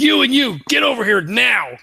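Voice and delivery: high, urgent, in-character shouted yelling. Ordering two crew members to come over in character: in-character yell. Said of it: "so I just start yelling".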